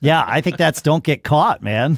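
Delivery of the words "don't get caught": normal talking voice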